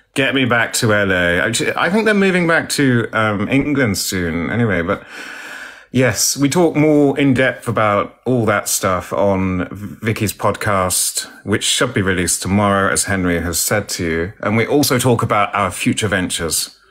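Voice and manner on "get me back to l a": couldn't-care-less nonchalance. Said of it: "She's nonchalant. She's like".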